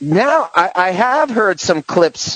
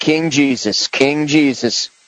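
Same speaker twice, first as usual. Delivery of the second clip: normal talking voice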